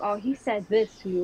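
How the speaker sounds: ordinary talk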